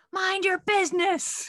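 very high, unhinged shriek, screamed. Telling how an old man scolded some kids, imitating James screaming. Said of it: "And James just screamed".

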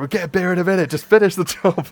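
mock, very high-pitched, urgent yell. Retelling how the other speaker yelled to finish the job: imitating someone yelling. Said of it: "you're just yelling at me".

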